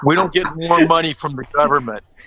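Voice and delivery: high-pitched, toned-down, mild yell. Acting out a researcher screaming at his wife: imitating someone screaming. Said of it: "he's screaming at his wife".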